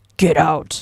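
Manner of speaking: deep, loud voice. Telling a story, quoting a deep voice heard behind him: deep voice on get out. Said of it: "I think I did nice and deep".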